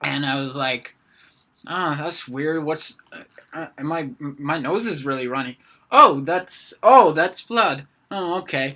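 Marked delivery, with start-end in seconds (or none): 1.7-8.8 sleepy, slow, groggy, muddled half-awake mumble. Retelling waking up with a nosebleed: imitating groggy waking voice. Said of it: "groggily waking up".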